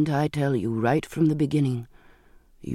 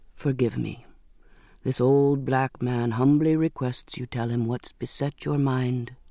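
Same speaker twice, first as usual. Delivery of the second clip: plain reading voice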